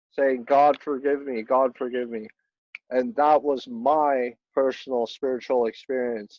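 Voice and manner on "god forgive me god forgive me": acted crying, tearful voice. Retelling waking up from a dream about a dead dad: reenacting crying while pleading.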